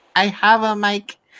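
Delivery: put-on slow, tiny little child's voice. Retelling a kid turning on his mic at the last second, imitating a kid's little voice. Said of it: "he turns on his mic in his little voice".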